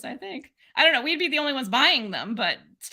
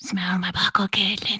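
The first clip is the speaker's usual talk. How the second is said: soft, close whisper as into ear; 5 semitones lower than usual. Teasing another speaker by saying the line into their ear, whispering. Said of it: "like you whispering in my ear".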